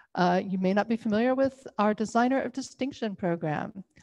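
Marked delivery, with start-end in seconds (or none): none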